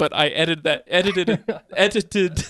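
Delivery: tripping over words through giggles, stammering. Apologizing to listeners for an edited stretch: stumbling over words while laughing. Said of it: "I can't even say it".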